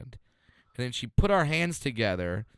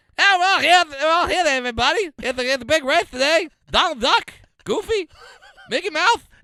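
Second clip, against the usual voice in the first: put-on race announcer voice, much higher, louder; 8 dB louder than usual. Act out the announcer of Roadster Racers announcing races, Jay Leno as a race announcer. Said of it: "He's announcing races".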